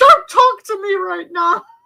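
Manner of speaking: fake high scream.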